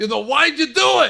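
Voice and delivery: put-on loud, belted Chicago accent. Retelling what a kid in a movie yells at his mom: Chicago accent. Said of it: "I'm just doing Chicago here".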